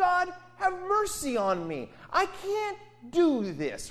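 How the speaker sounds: desperate scream, very high-pitched and drawn-out. The speaker voices a man sitting by the road addressing God, retelling a scream to God. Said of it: "he's screaming at God".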